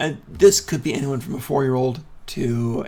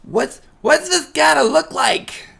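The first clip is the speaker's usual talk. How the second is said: put-on raspy kid voice, higher; 14 semitones higher, 4 dB louder than usual. Voicing a kid repeating the players' question: raspy kid voice. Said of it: "This kid calls out".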